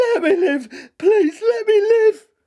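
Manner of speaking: very high, loud, fearful, terrified pleading tone. A man with broken legs begs the narrator, pleading in fear. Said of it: "he pleaded".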